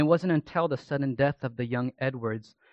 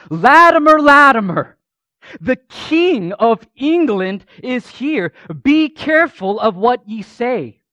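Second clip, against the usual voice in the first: loud, proclaiming pulpit-style shout; 10 semitones higher, 15 dB louder than usual. Telling of a man shouting to his congregation, retelling a loud shout. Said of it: "now in a loud voice, he continued to proceed to shout".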